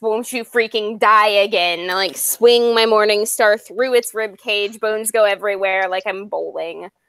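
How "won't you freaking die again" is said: rumbly, angry dragon voice. Player in a tabletop game attacks a monster, screaming in a rumbly angry dragon voice. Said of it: "scream in my rumbly dragon angry voice".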